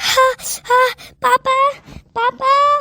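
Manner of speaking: very slow, strung-out calling out. A daughter calls out to her father after tasting a very spicy dish; shouting. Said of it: "तू चिल्ला क्यों रही है?".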